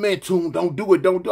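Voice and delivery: plain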